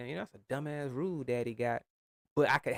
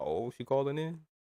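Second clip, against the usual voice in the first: ordinary talk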